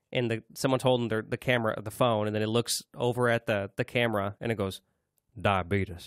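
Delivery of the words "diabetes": low, deep, dropped voice. Retelling a video where someone looks at the camera, low voice on diabetes. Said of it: "Just that low voice".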